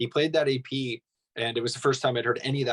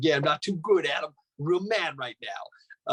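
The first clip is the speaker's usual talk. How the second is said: ridiculous-sounding put-on Brooklyn accent; 4 semitones higher than usual. Speaker quotes their own earlier try at doing someone, in a Brooklyn accent. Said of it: "I sounded like I was like a Brooklyn accent".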